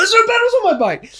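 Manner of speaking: shouting in a panic. Retelling how she called out to everyone around her in a panic during a race. Panicked shouting. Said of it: "I was literally shouting at everyone".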